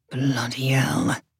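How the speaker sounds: low, soft mutter under the breath. Narrating a man reacting to a letter his wife shows him, muttered. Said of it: "Ed Jenkins muttered".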